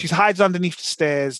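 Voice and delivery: ordinary talk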